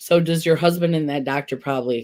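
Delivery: ordinary delivery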